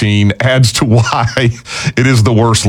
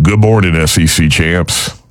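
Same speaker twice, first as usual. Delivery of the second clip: rough, half-landed, borrowed put-on voice; 5 semitones lower than usual. Reading a listener's email, done in a best Carl voice. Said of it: "in my best Carl voice".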